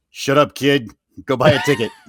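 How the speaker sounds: animated, dismissive, with wide swooping pitch swings. Pretending to be the Walt figure answering a boy: voicing Uncle Walt. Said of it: "Uncle Walt".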